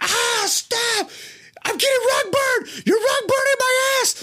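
put-on pained shrieking, very high-pitched. Retelling getting a wedgie that lifted them off the ground, re-enacting screaming bloody murder. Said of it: "I'm screaming bloody murder".

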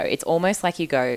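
ordinary delivery

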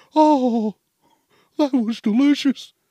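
loud, high, full, bloated cartoon bear voice. Describing feeling bloated after a meal, the speaker talks in a Winnie the Pooh voice. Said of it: "Sound like fucking Winnie the Pooh".

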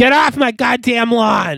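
very high, shrill, all-out screaming yell. An actor tries the line after being asked to scream it: screaming. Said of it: "do you mind screaming, get off my lawn?".

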